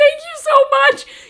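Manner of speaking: play-acted tearful crying, very high, shrill and loud. Retelling thanking the man who paid for them: retelling own tearful thanks. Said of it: "and I'm still crying".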